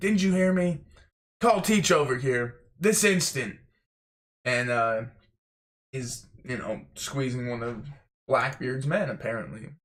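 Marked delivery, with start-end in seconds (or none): 0.0-3.6 acted-out screaming, high and loud. Retelling a manga scene of a warlord demanding Teach: imitating Gecko Moria screaming. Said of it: "he's screaming".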